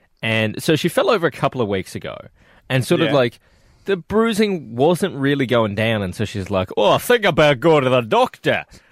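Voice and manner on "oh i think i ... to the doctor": deep-set Scottish man voice. Telling about a coworker, imitating her in a large Scotsman voice. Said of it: "Please tell me that's exactly what she sounds like".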